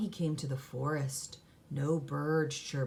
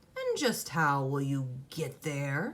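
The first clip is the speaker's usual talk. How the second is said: swooping, growling troll voice. Reading a story, the troll speaks to Jack at the bridge, growling troll voice. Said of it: "growled the Troll".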